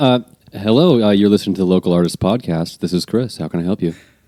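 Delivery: telephone answering voice. Answering a phone call for the Local Artist Podcast, telephone voice. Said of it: "could you do that telephone voice thing".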